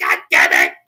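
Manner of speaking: very deep, very low, loud, furious voice. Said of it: "He's gonna Google it and be like".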